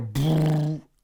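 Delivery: buzzing raspberry blown through the lips. Comparing two sound effects, imitating a sound by blowing a raspberry. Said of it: "When does Godzilla blow a raspberry?".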